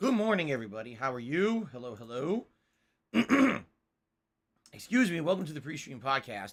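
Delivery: talking through a clogged, gummed-up throat. Opening a podcast with a throat that feels gunked up. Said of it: "as you can hear in my voice".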